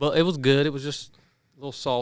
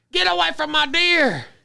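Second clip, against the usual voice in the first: very shrill, high, ragged, rough scream; 5 dB louder than usual. Retelling how Brooke ran out the back door at coyotes: imitating Brooke screaming. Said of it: "she starts screaming".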